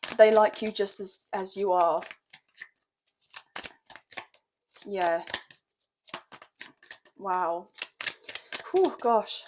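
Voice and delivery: slow, moved, on the verge of crying. Reader giving a card message to someone, close to tears. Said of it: "I feel like I want to cry".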